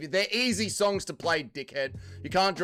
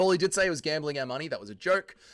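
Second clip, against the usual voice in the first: plain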